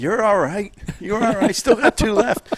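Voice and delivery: very high-pitched yell. Retelling yelling to a batter arguing a strike: retelling own yell. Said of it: "And I'm yelling".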